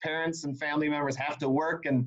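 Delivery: plain reading voice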